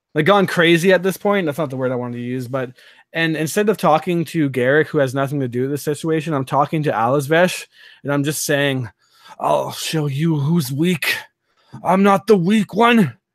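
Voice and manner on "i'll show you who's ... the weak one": slow, crazed, disoriented, unhinged menace. Casting a spell while speaking to a foe: disoriented and crazed, in character. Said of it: "I'm actually speaking, like, ... disoriented and a bit, like, ... gone crazy".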